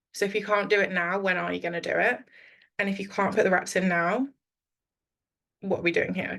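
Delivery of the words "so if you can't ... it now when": ordinary delivery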